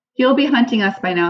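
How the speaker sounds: ordinary delivery, nothing marked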